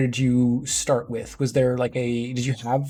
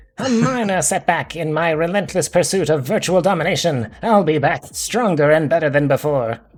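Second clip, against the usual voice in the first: cartoon villain voice, animated-series style; 4 semitones higher, 5 dB louder than usual. Reading in-game dialogue aloud to advance the game: Skeletor voice. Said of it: "pull it back to the original Skeletor voice".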